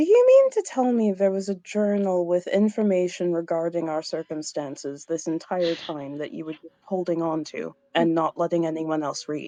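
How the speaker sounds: very calm, low, composed voice throughout. Narrating a scene, the speaker voices a character addressing another, very calm. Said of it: "just very calmly says".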